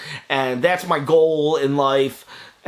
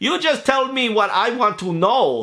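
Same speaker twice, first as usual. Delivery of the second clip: really bad put-on Jamaican accent, higher; 7 semitones higher than usual. Retelling what she once said, in a really bad Jamaican accent. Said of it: "I'll do a really bad Jamaican accent right now".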